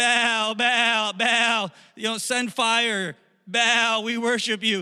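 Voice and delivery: high, long, drawn-out, stretched shout. Retelling a story, the speaker acts out worshippers calling on Baal: imitating people shouting. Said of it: "so they're shouting".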